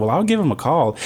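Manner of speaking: ordinary talk, nothing marked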